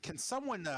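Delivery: animated, high-pitched, swooping shouted yell. A character dodging a grapple stares south and yells. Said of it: "he just kind of yells".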